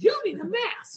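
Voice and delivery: piercing, very high screeching voice. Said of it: "screeching sixty-year-old lady".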